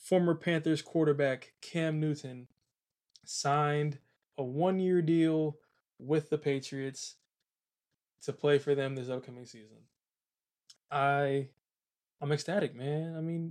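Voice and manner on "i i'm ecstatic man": flat unexcited deadpan, much slower. Host reacting to a quarterback's new signing, flat, unexcited. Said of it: "you can't really tell in my voice".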